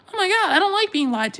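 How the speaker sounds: put-on very high little-kid voice. The speaker acts out an imagined conversation with a kid, kid voice. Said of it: "that was my kid voice".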